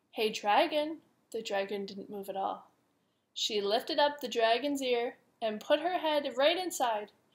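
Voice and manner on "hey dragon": soft whisper, higher pitch. A narrator reads Elizabeth calling to a sleeping dragon, in a soft whisper. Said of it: "Elizabeth whispered softly".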